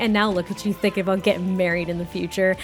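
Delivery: ordinary talk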